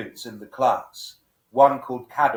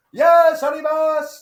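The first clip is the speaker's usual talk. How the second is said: put-on very high, loud, all-excited cheer; 7 dB louder than usual. Retelling a film scene, imitating a character trying to enthuse a class: imitating excited Takeshi Kitano. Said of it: "he's all excited".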